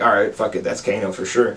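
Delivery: ordinary delivery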